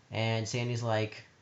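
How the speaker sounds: ordinary talk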